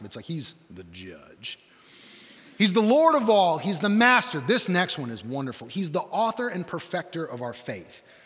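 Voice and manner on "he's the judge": very deep, hushed, dropped an octave. Showing how to say a title of Jesus: voice dropped an octave. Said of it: "you gotta drop your voice an octave".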